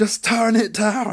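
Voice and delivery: top-of-lungs scream, very high, very slow, shrill. Describing a woman growing annoyed at a man not listening; retelling a full-lung scream. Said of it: "top of her lungs screaming".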